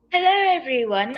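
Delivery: exaggerated, over-the-top British accent. Greeting viewers in a daily-life video, over-the-top British accent. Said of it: "using an over-the-top British accent".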